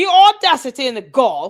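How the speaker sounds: swooping, put-on, attempted British accent. Asking listeners to judge whether the accent is improving: British accent. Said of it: "Tell me if my British accent is getting better".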